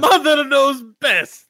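very high-pitched put-on Italian accent. Practicing an accent for a dwarf character, which slides back into Italian. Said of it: "back to Italian".

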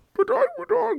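put-on villain voice, pitched very high. Repeating a line after noticing it sounded like Bane: Bane voice. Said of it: "I sounded like Bane right there".

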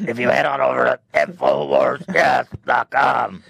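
hoarse, rough, throat-straining infomercial announcer voice. Imitating how the guy at the end talks: Alex Jones voice. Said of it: "it's the Alex Jones voice".

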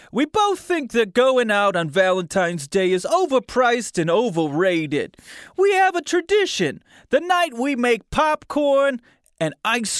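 put-on New Jersey accent. Speaker imitates how a man sounds in their mind: new jersey accent. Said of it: "what's a New Jersey accent".

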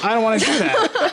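put-on high, whiny, fussy old-man voice.

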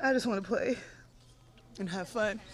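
words pushed out through tears, crying while talking. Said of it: "I swear I wasn't gonna cry".

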